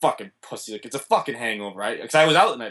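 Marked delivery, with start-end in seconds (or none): 0.0-2.0 hushed, grumbling mutter with cursing under the breath. Driving the speaker to the hospital, the father curses to himself, imitating dad muttering. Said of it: "he's now muttering to himself like".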